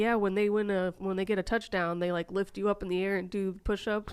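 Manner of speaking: ordinary delivery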